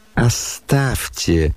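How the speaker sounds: disgusted, pained revulsion, as if it hurts. Nastasya Filippovna answers someone with disgust, as if through pain. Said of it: "с отвращением и как бы через боль проговорила".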